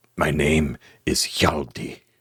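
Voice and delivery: put-on whisper. A narrator voicing a collapsed man cut down into the listener's arms, Hjalti's whisper. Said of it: "you just hear him whisper into your".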